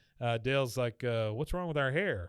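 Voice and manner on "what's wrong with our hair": usual speaking voice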